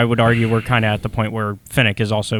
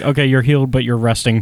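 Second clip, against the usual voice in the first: ordinary talk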